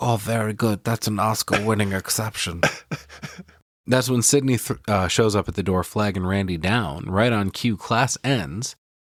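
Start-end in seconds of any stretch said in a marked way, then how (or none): 0.0-2.6 put-on gruff gangster voice. Retelling a film scene where a character imitates an actor: Marlon Brando impression. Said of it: "Randy does a little Marlon Brando impression here".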